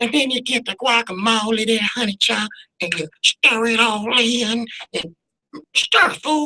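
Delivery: high-pitched cartoon-character voice. Imagining making guacamole live on the Today Show, the speaker demonstrates a cartoon voice. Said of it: "in my cartoon voice".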